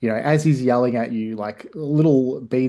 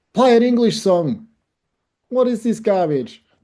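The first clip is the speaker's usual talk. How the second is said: put-on shrill, very high drunken yell; 10 semitones higher, 4 dB louder than usual. Voicing a heckler shouting at a guitar player: yelling drunken Englishman. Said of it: "drunken Englishman yells out".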